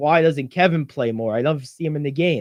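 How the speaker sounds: plain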